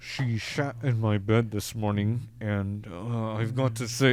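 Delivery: low, slow drawl through clenched teeth. Showing how to talk through clenched teeth: Johnny Depp impression. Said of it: "I'm just clenching my teeth".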